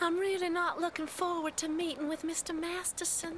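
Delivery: put-on strong southern belle accent. Describing a girl in a show, the speaker acts out her line in a full-on southern belle accent. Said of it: "full Southern Bell accent, where she's like".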